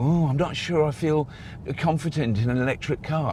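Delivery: put-on complaining whine. Mocking an unsure electric-car driver, in a put-on whiny voice. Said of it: "I have to put on a whiny voice".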